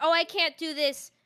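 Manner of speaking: mocking self-pitying, self-deprecating put-on voice. Imitating a VTuber who talks down on themselves: imitating a self-deprecating VTuber. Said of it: "if you say".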